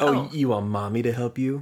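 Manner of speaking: sassy, cheeky talking-back tone. Showing how the nurse's line could sound as a reply: sassy response. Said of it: "kinda sounds like it could have been a sassy response".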